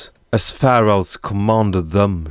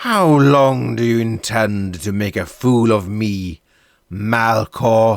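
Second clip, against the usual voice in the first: cold, icy menace with anger forced down; 2 semitones higher than usual. Confronting Malkor, forcing his anger down: cold rage. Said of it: "He forced his anger down and compressed it into cold rage".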